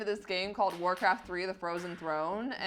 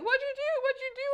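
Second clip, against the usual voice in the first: very high, shrill, frantic panicked yell. Retelling the moment the car suddenly sped up: imitating mom yelling. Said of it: "my mom's like yelling at me".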